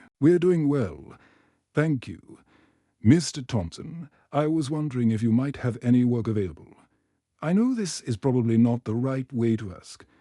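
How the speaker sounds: ordinary delivery, nothing marked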